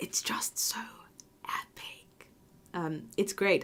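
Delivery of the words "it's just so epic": soft, hushed whisper. Recommending a series to listeners, whispering. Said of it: "I don't know why I'm whispering".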